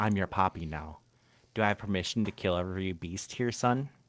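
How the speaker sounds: soft, hushed half-whisper under the breath. Recounting a scene from a show, act out what Jinwoo says after catching his opponent, retelling a half-whisper.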